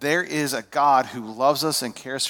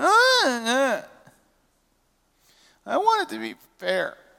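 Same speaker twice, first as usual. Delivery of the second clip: put-on very high, swooping, drawn-out childish whine; 11 semitones higher than usual. Imitating the son whining about fairness: imitating a whiny voice. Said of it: "That's the voice that I hear when I hear whining".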